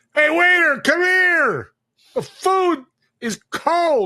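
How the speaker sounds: mock, shrill, very high, very slow, drawn-out screaming. Acting out a restaurant customer complaining about cold food: imitating a customer screaming.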